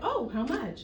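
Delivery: ordinary talk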